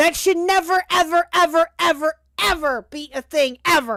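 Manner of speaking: super loud screaming. Ranting that something should never be a thing, screaming, super loud. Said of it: "I didn't mean to scream or get super loud".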